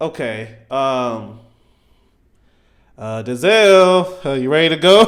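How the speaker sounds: mock hesitant, nervous, very slow, halting, rising intonation. Retelling a tense scene where gangsters stare at the cop: imitating Ethan Hawke nervous. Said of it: "it got Ethan Hawke a little nervous".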